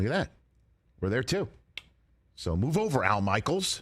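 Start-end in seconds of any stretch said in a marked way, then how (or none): 2.4-3.8 slow, forceful, pushy, aggressive delivery. Listing the channels the show streams on, then: aggressive. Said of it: "That was aggressive".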